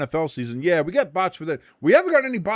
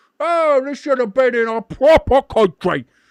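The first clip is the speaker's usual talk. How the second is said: mocking, griping, high, loud whiny tone; 9 semitones higher, 7 dB louder than usual. Speaker mocks Europeans' complaints by imitating them complaining. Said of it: "all they've done is bitch".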